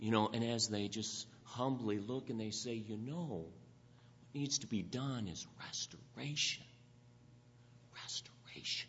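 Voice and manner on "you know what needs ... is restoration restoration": play-acted, soft, breathy, sissified half-whisper. Speaker mimicking how people humbly say it, in a mocking nice, sissified delivery. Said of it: "they say it so nice and sissified".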